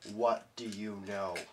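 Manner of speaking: very low, dark, hushed voice. After the old man is smacked to the ground, the attacker speaks in a very dark voice. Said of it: "I say with a very dark voice".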